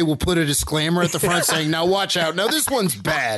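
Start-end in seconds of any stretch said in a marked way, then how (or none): none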